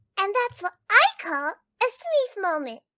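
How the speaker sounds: very high, goofy, silly put-on funny voice. After offering to do a funny voice, doing a funny voice. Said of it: "do you want to hear a funny voice?".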